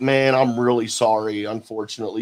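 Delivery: put-on disappointed, let-down, bummed-out, sorry-sounding tone. Retelling what Paige said about missing tonight: imitating Paige sounding bummed out. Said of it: "she sounded bummed out when she told me".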